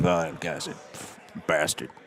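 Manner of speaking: very hushed, very low, mumbled grumble under breath. Retelling what a guy at the blackjack table said: imitating someone mumbling under breath. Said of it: "mumbled under his breath".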